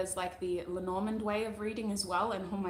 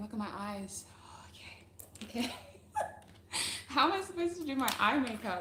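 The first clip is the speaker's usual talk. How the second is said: words breaking up into giggles while talking; 3 semitones higher than usual. On a livestream, the speaker can't stop laughing: laughing while talking. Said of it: "I'm crying with laughter over here".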